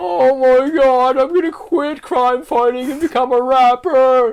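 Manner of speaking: mock very high, very loud blubbering wail. Joking about Batman after he kills someone: mock crying as Batman. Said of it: "crying, boogers coming out of his nose".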